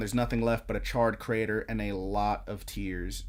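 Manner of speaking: ordinary talk, nothing marked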